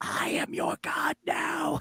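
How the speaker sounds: hushed whisper of a demon bird creature. Narrating a game, the speaker voices a human-faced bird on the player's shoulder, whispering. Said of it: "whispering in your ear".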